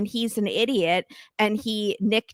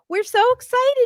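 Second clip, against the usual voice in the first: imitated fake-nice tone, higher and louder; 4 dB louder than usual. Retelling how the parents greet Julia: imitating fake niceness. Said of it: "all nice".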